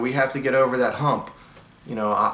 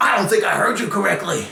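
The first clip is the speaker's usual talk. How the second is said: play-acted drill sergeant voice, high, confrontational; 7 semitones higher, 3 dB louder than usual. Retelling how a drill sergeant gets in a recruit's face, mock in-your-face challenge. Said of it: "get in your face like".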